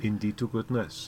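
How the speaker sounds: put-on Welsh-Pakistani accent. A speaker quotes what a man said, in a Pakistani Welsh accent. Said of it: "sounding Pakistani Welsh".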